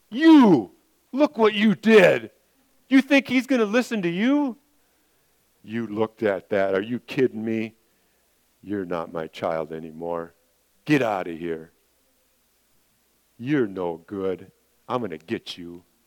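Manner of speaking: condemning, accusatory devil voice with swooping pitch. Speaker showing how the devil's voice sounds, condemning, accusatory devil voice. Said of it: "the voice of the devil will be condemning and accusatory".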